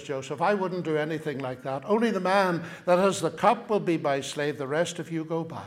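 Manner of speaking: ordinary delivery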